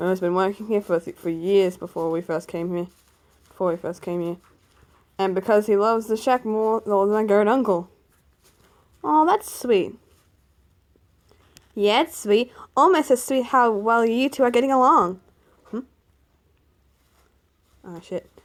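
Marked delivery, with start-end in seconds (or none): 12.7-15.2 put-on high girl voice. Reading a character's line aloud, girl voice. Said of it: "I gave a girl voice".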